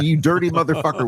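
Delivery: high, shrieking, screamed outburst. Retelling own reaction on opening a video that was sent: imitating own scream. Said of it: "I screamed".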